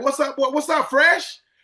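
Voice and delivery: high, yelled, hollering voice. Showing how he greets people he knows when he sees them first, yelling a greeting. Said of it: "I'm yelling at you".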